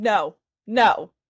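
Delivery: repeated loud screaming. Retelling screaming on seeing him in the bathroom, retelling a scream. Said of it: "I just start screaming".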